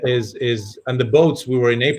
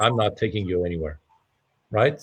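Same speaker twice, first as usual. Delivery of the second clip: plain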